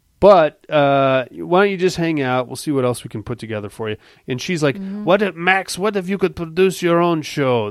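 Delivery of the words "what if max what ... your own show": bad, terrible fake German accent. Retelling what a woman said to Max, the speaker uses a terrible German accent. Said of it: "this is a terrible german accent".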